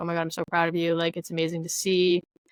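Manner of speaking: ordinary talk, nothing marked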